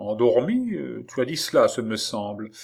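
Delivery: ordinary delivery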